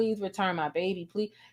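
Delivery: put-on crying, pleading tone. Retelling how the biological mother begged for her child back: imitating a mother crying and begging. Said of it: "is just crying".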